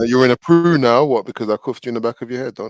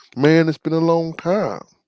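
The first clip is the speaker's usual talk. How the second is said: attempted American accent, pitched higher; 4 semitones higher than usual. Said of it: "his best American accent".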